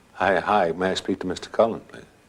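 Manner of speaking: ordinary delivery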